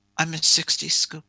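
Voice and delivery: put-on mutter under the breath. Retelling the woman's answer on the third asking, imitating a mutter under the breath. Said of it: "under her breath, she just mutters".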